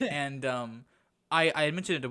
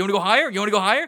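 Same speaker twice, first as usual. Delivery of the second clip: put-on demanding tone, higher and louder; 6 semitones higher, 10 dB louder than usual. Acting out someone at the wrong job demanding a raise: acting out someone demanding a raise. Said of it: "just started demanding it".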